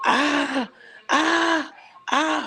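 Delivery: shrill, high screams of pain. Retelling how he suddenly doubled over holding his stomach: imitating him screaming. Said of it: "he started screaming".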